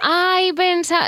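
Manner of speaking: high, slow, drawn-out surprised tone.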